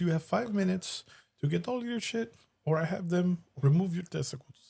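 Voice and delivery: put-on Middle Eastern accent. Retelling a movie scene as the landlord: imitating Rob Schneider's foreign landlord. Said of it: "he kinda plays like a, a foreigner".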